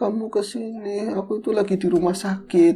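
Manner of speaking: weak, feeble, tearful, high voice through crying. Acting out someone calling from the hospital, imitating a weak, crying voice. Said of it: "nangis, suaranya nggak ter".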